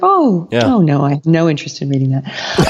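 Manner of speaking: put-on sweet, kindly, loving and gentle voice. Retelling how a teacher turned down a gifted book: imitating a loving refusal. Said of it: "she said it so lovingly".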